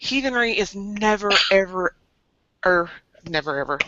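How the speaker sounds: openly sarcastic delivery. Repeating a saying about heathenry he loves to quote: sarcastic. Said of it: "I'm saying it sarcastically".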